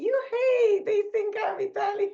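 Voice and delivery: very high, loud, overjoyed squeal of delight.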